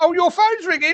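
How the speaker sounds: mock shrill shout at the top of the voice, very high. Telling a story, quoting his missus calling out: retelling a loud shout. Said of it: "shouts at the top of her voice".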